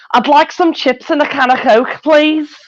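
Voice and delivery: very high-pitched Liverpool Scouse accent. Asked for their best accent, speaker uses a trigger sentence; Scouse accent. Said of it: "I have a trigger sentence that always helps me get into it".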